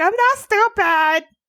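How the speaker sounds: put-on high, tearful, crying child's voice. Retelling running off from her sister at about nine, imitating crying as a child. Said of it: "I run off and I'm crying and I'm like".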